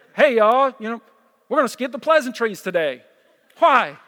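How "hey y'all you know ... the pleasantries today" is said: weak, bad, put-on Alabama accent. Imitating our executive pastor Zach walking in, in a bad Alabama accent. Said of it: "with an Alabama accent".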